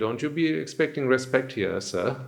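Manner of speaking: mockingly polite, sarcastic tone. Retelling what they teach a Swamin, imitating a sarcastic tone. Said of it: "that "sir" we say sarcastically".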